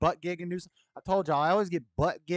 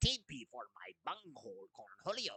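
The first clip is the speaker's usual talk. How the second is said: hushed, low, sing-song murmur with swinging pitch; 6 semitones lower, 13 dB quieter than usual. Showing how the character talks, the speaker does a Cornholio voice. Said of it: "how's he talk?".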